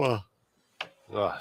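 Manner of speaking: soft words spoken mid-yawn. Chatting with the guys after a racing weekend, speaking through a yawn. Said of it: "sorry for yawning".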